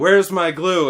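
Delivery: ordinary delivery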